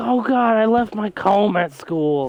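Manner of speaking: play-acted high, frantic, worked-up panicky outburst. Retelling a worry over a comb left at school: imitating someone freaking out. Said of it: "he's freaking out".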